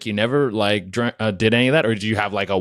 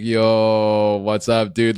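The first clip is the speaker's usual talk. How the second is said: mock slow, sloth-like, sluggish stoner drawl. Teasing another speaker about seeming like a stoner: imitating a slow, sloth-like stoner. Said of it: "slow down, sloth-like demeanor".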